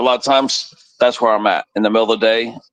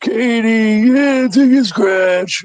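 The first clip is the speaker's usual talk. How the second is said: put-on very high, very slow, old New York mobster drawl; 13 semitones higher, 3 dB louder than usual. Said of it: "he talks like that".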